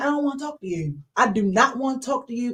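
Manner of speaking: ordinary talk, nothing marked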